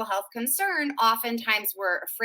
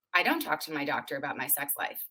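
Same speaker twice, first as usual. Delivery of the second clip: put-on deadpan, low, tossed off fast; 8 semitones lower, 6 dB quieter than usual. Retelling a woman's reply to the speaker's question, imitating a deadpan reply. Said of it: "she looked at me deadpan and said".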